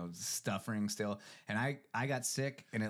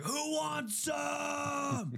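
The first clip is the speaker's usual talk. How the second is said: mock very high, hyped-up holler, some words drawn out. Recalling warming up at the gym, retelling his own yell. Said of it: "I was just yelling like".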